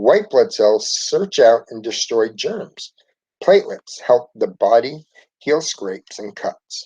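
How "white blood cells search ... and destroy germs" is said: plain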